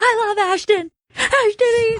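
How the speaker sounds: put-on screaming. Retelling a drunken night by the pool, imitating someone screaming. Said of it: "Just screaming".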